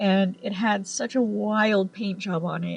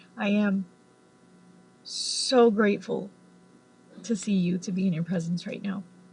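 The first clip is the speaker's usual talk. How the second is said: ordinary talk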